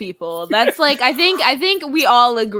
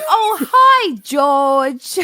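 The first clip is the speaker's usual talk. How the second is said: put-on British cartoon accent, higher pitch; 3 semitones higher than usual. Talking about her British accent, speaker quotes a cartoon, Peppa Pig British accent. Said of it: "That's all I know from Peppa Pig".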